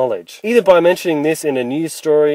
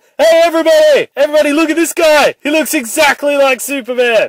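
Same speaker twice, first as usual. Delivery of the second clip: very high, boozy, fake-drunk calling out; 12 semitones higher, 4 dB louder than usual. Acting out a scene pitch, calling to everybody at the party: Bruce Wayne pretending to be drunk. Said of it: "Bruce Wayne is pretending to be drunk".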